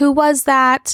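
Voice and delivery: restrained, put-on angry yelling. Retelling how she yelled a question at him: imitating someone yelling. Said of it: "she started yelling and screaming at him".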